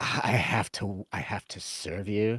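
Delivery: put-on nose-in-the-air voice. Mocking restaurant employees who act like jerks: imitating a stuck-up employee. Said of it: "this stuck up nose in the air".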